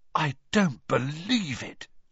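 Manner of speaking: stunned, dazed voice of disbelief. Filing back up the steps behind a visiting party, in a stunned voice. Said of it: "Ron said in a stunned voice".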